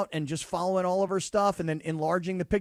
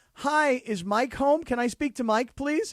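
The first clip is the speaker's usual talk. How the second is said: mock very courteous phone voice, pitched up; 6 semitones higher than usual. Retelling calling a house and asking for Mike: retelling own very nice phone request. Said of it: "I was very nice".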